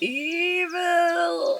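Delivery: very high, stretched-out, drawn-out cartoon hero voice. Reading a chat message aloud: Mermaid Man voice. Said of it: "I read this in Mermaid Man's voice".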